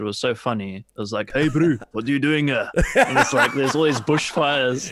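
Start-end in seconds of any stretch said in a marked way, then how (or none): 1.3-2.7 put-on South African accent. Recalling the voice actors in an old game he played: Far Cry 2 South African accent. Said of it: "all these like South African voice actors".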